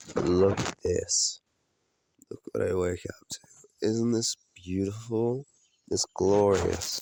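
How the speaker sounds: groggy just-woke-up voice. Just woke up in the woods, showing the morning to viewers, groggy. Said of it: "so I sound super groggy".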